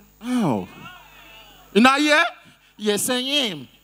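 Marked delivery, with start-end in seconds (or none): 2.8-3.6 put-on American accent. Repeating a guest's answer after she says she's from America: imitating an American accent. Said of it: "I go know say na American citizen".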